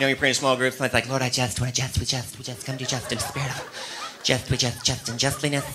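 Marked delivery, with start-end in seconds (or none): 1.1-5.7 very soft, hushed, flustered, nervous, tangled rambling. Mocking people who ramble when praying in small groups; imitating a nervous rambling prayer. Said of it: "they get nervous and they say just too much".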